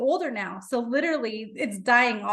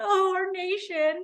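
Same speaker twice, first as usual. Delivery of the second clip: put-on high, weepy, fake tearful crying; 8 semitones higher than usual. Retelling an audience pretending to care: imitating fake crying. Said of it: "all crying too".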